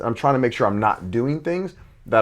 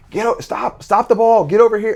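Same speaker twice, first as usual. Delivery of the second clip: mock coach shout, very high, loud and projected; 9 semitones higher, 5 dB louder than usual. Recalling yelling to a kid across a gym with six other courts: retelling a loud projected yell. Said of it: "Like I'm projecting loud".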